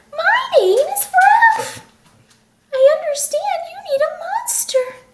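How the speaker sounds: silky, high-pitched voice. A second monster introduces himself to the narrator, in a high, silky voice. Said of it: "he said in a high, silky voice".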